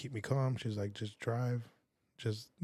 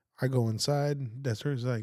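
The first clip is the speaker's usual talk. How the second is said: ordinary delivery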